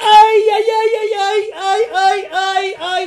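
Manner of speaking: very high, loud yelp of pain. The strongest of them strikes Saba, then suddenly cries out in pain. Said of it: "Вдруг он закричал".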